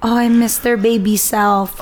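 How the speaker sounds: ordinary talk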